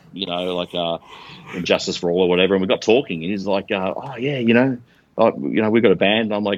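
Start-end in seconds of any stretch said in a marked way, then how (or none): 3.9-6.3 put-on very thick, broad Scottish accent, laid on thick. Retelling what a kid at a burger van said: very thick scottish accent. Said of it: "obviously in a very thick, um, Scottish accent".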